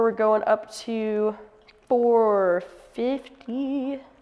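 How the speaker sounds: very slow, stretched-out, drawn-out speech. Brewing coffee, announcing the second pour, very slow. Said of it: "I don't know why I said that so slowly".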